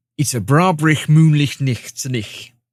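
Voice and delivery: loud, rusty, butchered put-on Scottish accent. Trying a long-unused scottish phrase for entertainment, butchered scottish accent. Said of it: "My my Scottish phrase is".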